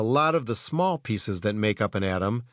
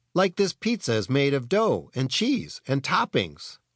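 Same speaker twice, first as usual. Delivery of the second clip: plain reading voice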